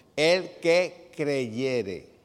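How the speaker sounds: "el que creyere" stressed and drawn out very slow.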